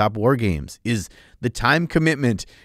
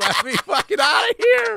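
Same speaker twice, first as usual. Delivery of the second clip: play-acted, very high, rising, desperate shrieking cry. Acting out being stuck in quicksand, calling for help: mock screaming. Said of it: "you just screaming at Treyu".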